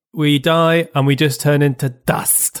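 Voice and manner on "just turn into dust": ordinary talk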